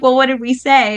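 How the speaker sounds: ordinary talk, nothing marked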